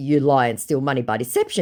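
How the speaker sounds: normal talking voice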